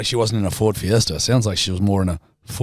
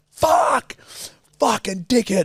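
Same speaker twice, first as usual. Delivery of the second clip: put-on furious outburst, very high, shrill and swooping; 12 semitones higher than usual. Recalling how he once reacted to someone, the speaker retells his own angry outburst. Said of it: "couldn't manage my temper at the time".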